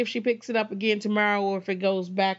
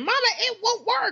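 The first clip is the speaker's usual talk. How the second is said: very high, shrill screaming. Recounting how she reacted when the game stalled, retelling her screaming. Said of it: "immediately start screaming".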